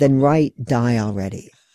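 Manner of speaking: normal talking voice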